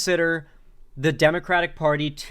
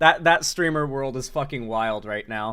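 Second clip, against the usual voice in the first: ordinary talk, nothing marked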